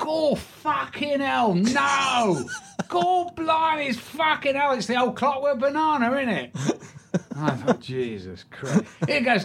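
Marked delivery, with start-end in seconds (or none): 0.0-6.6 put-on Cockney accent, much higher and slower. Retelling what a Cockney man said on coming in, Cockney accent. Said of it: "this Cockney comes in, and he goes".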